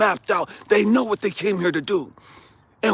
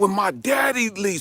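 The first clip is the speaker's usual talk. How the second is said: normal talking voice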